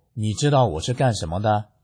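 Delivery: ordinary talk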